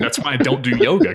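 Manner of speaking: plain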